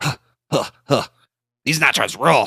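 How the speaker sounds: snicker, then cartoon character voice. Speaker doing impressions, responding to a clip in their Butt-Head impression. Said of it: "this is my butthead uh, responding to this".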